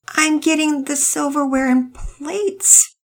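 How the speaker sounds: very high, slow voice trailing off. Answering, though not really answering the question, voice trailing off. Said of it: "Penelope answered with her voice trailing off".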